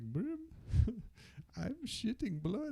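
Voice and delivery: put-on Indian accent, pitched very high. Retelling how a big filipino friend always talked, imitating a friend's accent. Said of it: "Sounds Indian".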